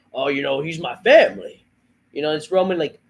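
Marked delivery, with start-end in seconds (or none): 0.1-1.6 sneering, dismissive, lame put-on voice. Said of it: "it's the fucking lame".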